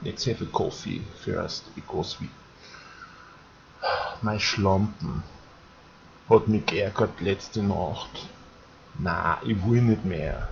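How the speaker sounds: Viennese accent. Showing how the Vienna accent sounds after calling it softer: soft Vienna accent. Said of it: "The Vienna accent is much softer".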